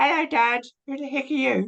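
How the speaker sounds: put-on very high-pitched small-boy voice, like a kid. A cosplayer voices the teacher's son, Lisbon's little son voice. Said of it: "his little son".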